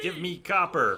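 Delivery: creepy put-on voice. Complaining about a daily quest on stream, the speaker mimics the quest's request in a creepy voice. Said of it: "In a creepy voice".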